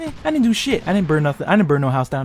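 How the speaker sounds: ordinary delivery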